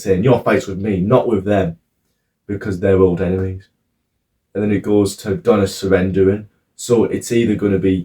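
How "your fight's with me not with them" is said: normal talking voice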